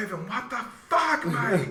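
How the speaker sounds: put-on heavy Australian accent, very high, loud. Retelling a teammate's reaction to a dropped pass: Nick's heavy Australian accent. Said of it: "he's got this heavy Australian accent".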